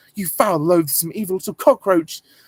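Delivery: female character voice pushed up high and loud. Talking about impressions done when younger, the speaker does a Hermione impression. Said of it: "I used to do impressions of Hermione from Harry Potter".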